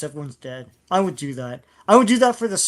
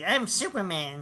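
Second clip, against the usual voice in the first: odd, weird high-pitched delivery; 3 semitones higher, 8 dB quieter than usual. Mocking an actor's superman line in a weird high voice: imitating a weird high voice. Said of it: "he had this weird high voice".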